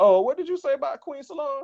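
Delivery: very high, loud put-on woman voice. Imitating his girl reacting to the show: imitating his girl. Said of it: "She be like".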